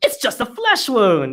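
play-acted mad outburst. Retelling a film scene where a character gets mad: imitating John Cleese getting mad. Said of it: "he gets all mad, and he's like".

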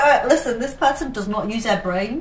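ordinary delivery

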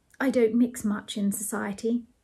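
plain reading voice

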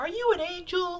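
put-on very high, hushed, soft young boy voice. Going through Star Wars cards, the speaker does a young Anakin impression. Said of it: "That's my young Anakin impression".

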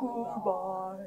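deepest possible voice, very low and soft. Saying goodbye in a rhyme game with listeners: very low voice. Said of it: "Let's say goodbye as low as we can".

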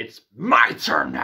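acted dark, aggressive menace, low and slow. Retelling a film scene where a mirror shard speaks: imitating a dark, aggressive line. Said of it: "she's getting all dark and aggressive".

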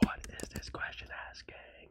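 hushed whisper. Recording late at night and apologizing for the quiet voice: whispering. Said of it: "Sorry, I'm whispering".

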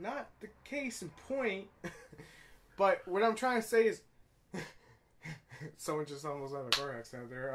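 uneasy speech laced with awkward laughter. Reacting as someone nearly has a car accident, laughing awkwardly. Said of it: "I'm laughing awkwardly".

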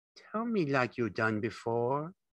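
cunning, crafty voice. Lenny asks George to tell it like he did before, craftily. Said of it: "Lenny said craftily".

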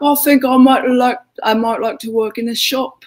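mock English rock-star accent. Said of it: "I could see Nigel Tufnell there".

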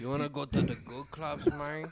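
imitated Spanish accent. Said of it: "I should probably do the Spanish accent".

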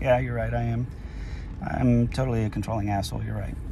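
indifferent, dismissive tone. Showing how to answer someone in a couldn't-care-less tone. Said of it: "when you use that tone of voice, like you just could give a shit".

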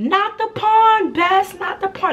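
very high, drawn-out shouting from a crowd. Retelling a crowd scene, acting out people yelling at her best friend. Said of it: "now people yelling like".

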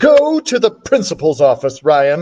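ordinary delivery, nothing marked

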